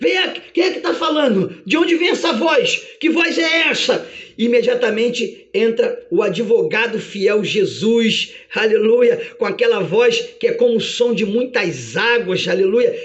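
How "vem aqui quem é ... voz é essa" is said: fast, high, dazed, bewildered frantic speech. Acting out Satan in an imagined courtroom trial: frantic, dazed Satan. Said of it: "eu imagino Satanás louco, atordoado".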